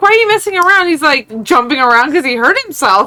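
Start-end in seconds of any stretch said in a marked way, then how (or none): 0.0-0.9 high-pitched yell. Retelling a lady yelling at her hurt husband: imitating someone yelling. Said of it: "yelling at him".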